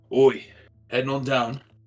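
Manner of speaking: very loud shout, calling out. Voicing a guard who turns to a player: voicing a guard. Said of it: "this guard right next to you, uh, turns towards you, Atlas, and is like".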